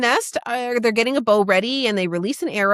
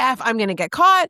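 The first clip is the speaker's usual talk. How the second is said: put-on annoyed, irritated voice. Acting out Poppy's thoughts during the scene: Poppy pissed and annoyed. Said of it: "she's pissed and annoyed and she's like".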